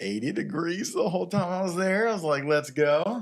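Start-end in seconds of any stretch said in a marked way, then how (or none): 2.4-3.2 mock sarcastic, loud and pitched up. Retelling own reaction to eighty-degree heat: retelling own sarcastic remark. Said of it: "it was being sarcastic".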